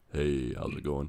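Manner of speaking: mock deep, ill-sounding voice. Retelling how a sick father-in-law sounded: imitating a sick deep voice. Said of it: "you get that deep voice that's super, uh, Shaft".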